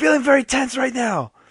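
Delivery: very high, loud, all-out shout. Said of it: "I have to yell out".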